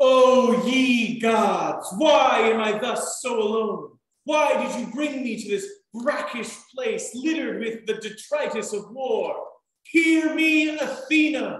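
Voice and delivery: grieving, mournful, stagey, theatrical lamenting voice. Playing a scene, a man at war and separated from his family calls out: lamenting as Aegeus. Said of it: "where Aegeus is lamenting being at war".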